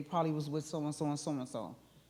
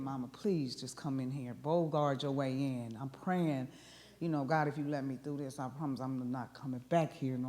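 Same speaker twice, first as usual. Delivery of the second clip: mock crying, tearful pleading voice; 2 semitones lower than usual. Retelling being tied up upstairs while the mother was downstairs: retelling crying and begging. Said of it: "But I'm crying and I'm begging".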